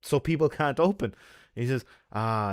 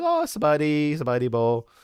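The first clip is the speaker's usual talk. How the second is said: mock very slow, drawn-out, slightly loud tipsy chatter; 3 semitones higher, 4 dB louder than usual. Retelling chatting to airport staff while checking luggage, speaking a bit loud. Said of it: "I'm kind of speaking a little bit loud".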